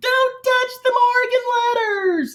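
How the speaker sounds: mock, piercing, very high, shrill outburst. Retelling a reality show moment about the Morgan letters: imitating Sonja Morgan yelling.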